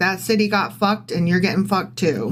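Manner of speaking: ordinary delivery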